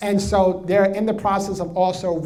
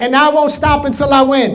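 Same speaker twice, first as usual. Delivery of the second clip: more energetic, higher and louder; 8 semitones higher, 9 dB louder than usual. Repeating the line again after the leader: with more energy. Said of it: "let's do it with more energy".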